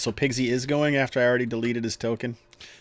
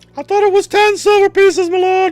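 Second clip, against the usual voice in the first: very high, loud voice cracking; 12 dB louder than usual. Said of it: "cracking adolescent voice".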